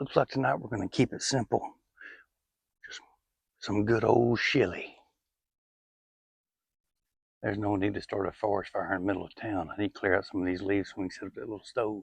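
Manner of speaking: hushed whisper under the breath. Setting up a little camp stove in the dark, whispering. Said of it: "I don't know why I'm whispering".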